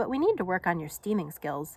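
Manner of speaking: plain reading voice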